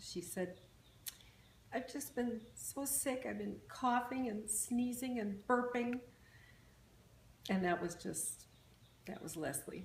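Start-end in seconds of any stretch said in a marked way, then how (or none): 1.7-6.0 mock pitiful, pathetic little poor-me voice, pitched up. Retelling a sick daughter's phone call with her aunt: imitating Leslie's pathetic voice. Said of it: "with the most pathetic voice".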